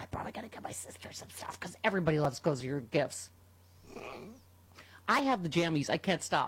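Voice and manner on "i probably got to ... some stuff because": soft, hushed whispered voice. Host reading a sponsor segment on the show: whispering. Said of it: "I'm whispering because".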